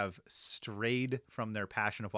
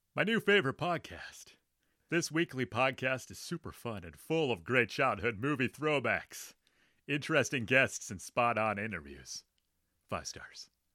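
swooping, sing-song, put-on cartoon voice. Reading a listener's podcast review aloud, in a Kronk voice. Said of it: "I'll do Kronk".

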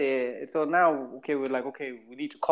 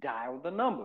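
put-on US accent; 7 dB quieter than usual. Retelling a man telling him to dial the number, in an American accent. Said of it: "With an American accent".

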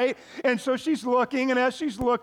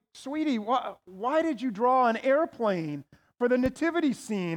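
plain

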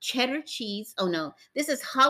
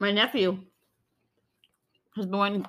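speaking with a mouth full of food; 3 semitones lower than usual. Chatting about a nephew's Costco cinnamon buns while eating, talking with mouth full. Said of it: "Sorry, I'm talking with my mouth full".

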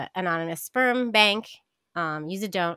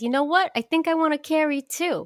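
put-on very high-pitched, thick New York accent; 9 semitones higher than usual. Retelling what a woman said at the bar: thick New York accent. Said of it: "I do her like she's the most New York accent".

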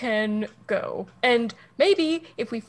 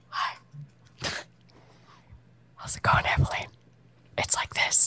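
whispered, close and soft. Showing another player how the message spell sounds: whispering in someone's ear. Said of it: "it's like a whisper in your ear".

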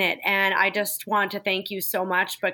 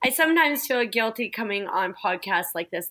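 ordinary delivery

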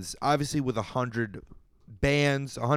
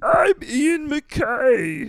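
squeezed-up, high-pitched and loud voice; 13 semitones higher, 5 dB louder than usual. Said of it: "why he's Kermit the Frog".

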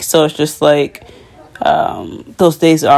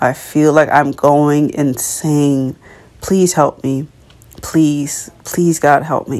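acted, pleading, crying-out voice. Speaker retells praying to God, acting out crying out to God. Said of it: "really crying out to God".

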